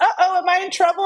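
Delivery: put-on flippant tone. Retelling what the agent said when told off: imitating her flippant tone. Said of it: "truly in that tone".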